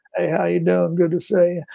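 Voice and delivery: put-on raspy, creaky, dry-throated Arkansas accent. Showing a favorite impression with a greeting: Bill Clinton impression. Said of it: "he's got that great kind of dried out throat thing with the Arkansas accent".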